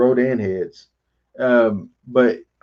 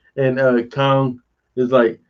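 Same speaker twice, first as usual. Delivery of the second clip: plain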